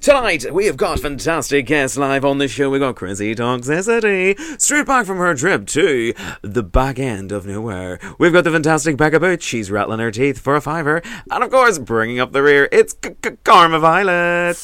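DJ-style radio presenter voice. Introducing the night's guests to the crowd, in a radio presenter voice. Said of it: "Roxy's radio voice".

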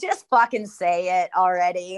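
ordinary delivery

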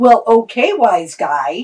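booming, very slow, drawn-out, swooping sarcasm. Imitating a podcast host trying to be sarcastic: imitating a sarcastic remark. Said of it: "when she tries to be sarcastic".

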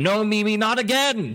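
very high-pitched, distressed, very upset outburst. Voicing the man behind the counter after Cindy takes damage, very upset. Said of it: "And he's like very upset".

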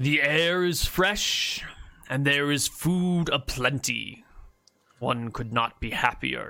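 grand, big giant character voice. A giant answers a traveler journeying north across the fen, thundering giant voice. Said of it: "Comes the thundering giant's voice".

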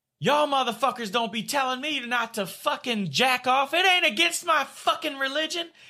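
put-on shrill, furious shouting, very high-pitched. Telling a story about a mad guy who came in, retelling a yell. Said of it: "He's yelling".

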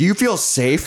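mock, blasted super loudly, high-pitched. Retelling a moment at a urinal, the speaker acts out saying it super loudly. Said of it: "I like said it like super loudly".

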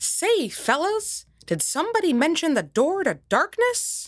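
high, squeaky cartoon mouse voice. Trying out an iconic line to show he could be Mickey, in a Mickey Mouse voice. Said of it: "you sound more like Mickey Mouse".

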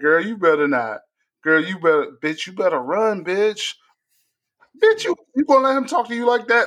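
put-on rattled-off yelling, fast and climbing in pitch. Describing watching movies at home, retelling yelling at the TV. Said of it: "I'm yelling at the TV. I'm like".

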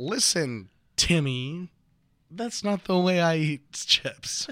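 slow, drawn-out, all-sarcasm drawl. Imitating the manager's line to another speaker: sarcastic George Costanza tone. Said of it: "in a sarcastic way, the same way George would".

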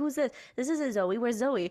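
usual speaking voice

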